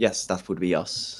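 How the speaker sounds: discreet, hushed, quiet, under the breath. Answering a discreet question so bystanders can't hear, speaking quietly. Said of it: "talk silently as well".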